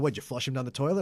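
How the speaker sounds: ordinary talk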